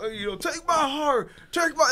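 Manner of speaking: high, slow pleading voice.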